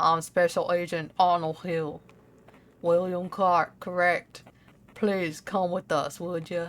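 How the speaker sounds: put-on dark, deep, country-accented lawman voice. Voicing a special agent character, deep country accent. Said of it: "he has to have a country accent ... He's gonna be deeper".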